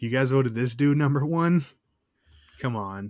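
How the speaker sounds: usual speaking voice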